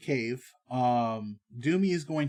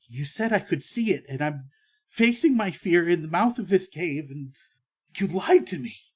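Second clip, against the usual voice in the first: slightly trembling, quivery, shaken voice; 4 semitones higher, 3 dB louder than usual. A townswoman at the mouth of the cave confronts the party: trembling a little. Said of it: "and she's kind of uh, / trembling a little bit".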